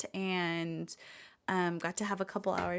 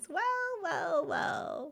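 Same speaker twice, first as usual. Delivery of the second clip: tiny put-on voices, much higher; 10 semitones higher than usual. Imitating people on Discord who greet him, little voices. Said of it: "you get like the little voices".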